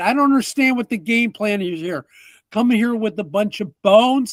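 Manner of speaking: fairly loud partial yell. A confused character looks at the players, yelling a little. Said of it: "he kind of yells it kind of a little bit".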